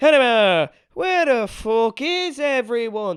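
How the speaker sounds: loud robotic, wooden delivery. Speaker describes a movie's villain, Conor McGregor's robotic line reading. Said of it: "he talks like this the whole film".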